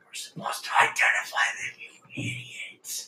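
hushed, close, secretive whisper. Voicing God, who whispers in a player's ear: whispering as God. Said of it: "God comes down and whispers in your ear".

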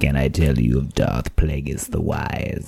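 low, creaky, creepy put-on rasp. Trading voices with a friend who does great voices, doing a creepy voice. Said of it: "That's creepy".

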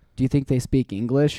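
ordinary delivery

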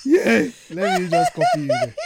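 very high, loud, each What squeaked in mock disbelief.

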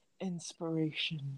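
very hushed, quiet commercial announcer voice. Imagining a wrestling team coming out to their new name: imitating an entrance voice. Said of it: "imagine the Iconics coming out and it just goes".

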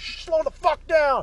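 yelling. Retelling yelling at a speeding driver who hit the brakes, retelling a scream. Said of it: "I fucking screamed".

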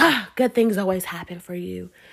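mock annoyed, begrudging tone with no happiness. Imitating what some people would say to the speaker: imitating an irritated tone. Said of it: "They say it with, like, a irritation".

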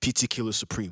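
put-on English accent. Joking that LeBron is a basketball killer: put-on English accent. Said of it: "You said it with an English accent".

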